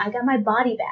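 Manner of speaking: normal talking voice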